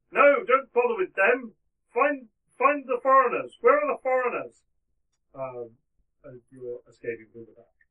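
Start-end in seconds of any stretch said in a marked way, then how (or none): 0.2-4.6 put-on very loud shout in an older-sounding voice. Game narrator voices someone shouting as the players escape: older-sounding voice shouting. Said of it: "hear an older sounding voice shouting".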